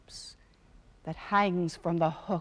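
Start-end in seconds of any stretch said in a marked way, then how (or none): none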